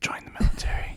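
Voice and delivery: soft, breathy whisper, very close. Imagining the fine print whispering to you: whispered. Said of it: "I just imagine it whispering to me like that".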